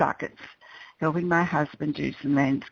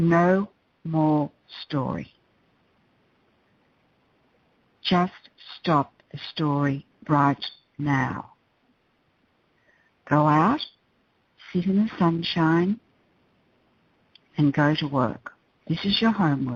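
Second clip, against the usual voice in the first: very firm, resolute, no-nonsense, commanding tone. Retelling own words to a client on the phone: firm voice. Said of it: "in a very firm voice".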